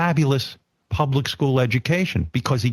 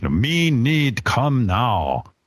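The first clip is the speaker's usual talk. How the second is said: put-on, mock caveman voice; 2 semitones lower than usual. Joking that men are like cavemen: put-on caveman voice. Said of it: "men are like cavemen. It's like".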